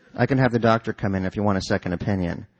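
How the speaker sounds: ordinary delivery, nothing marked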